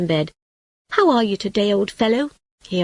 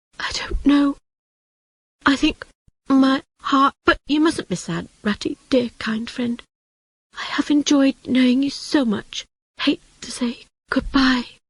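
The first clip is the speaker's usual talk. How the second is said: whispered words throughout, pitched up; 5 semitones higher than usual. Reading a story aloud, Toad saying goodbye from bed: whisper, slowing down. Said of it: "Toad's whisper became slower and slower".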